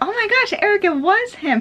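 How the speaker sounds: very high, thrilled exclamation.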